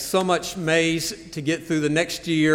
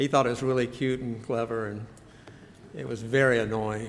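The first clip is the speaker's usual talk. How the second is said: plain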